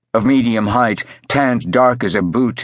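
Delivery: ordinary delivery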